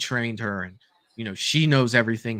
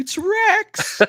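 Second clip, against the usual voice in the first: mock loud shrieking scream, very high pitch; 5 dB louder than usual. Retelling screaming at the tv: imitating a scream. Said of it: "I literally screamed at the T V".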